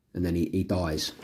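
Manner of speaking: usual speaking voice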